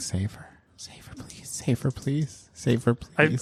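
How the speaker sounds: hushed whisper under the breath, repeated. During a tabletop game, as the cleric attempts Divine Intervention, whispering. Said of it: "I'm just whispering".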